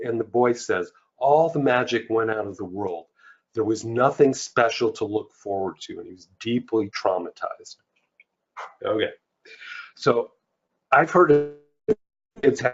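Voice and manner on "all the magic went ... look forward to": usual speaking voice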